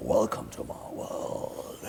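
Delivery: deep, hushed whisper, very slow and drawn out. Showing how Love's line was dubbed: Love's voice in lower keys. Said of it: "I played along with the lower keys".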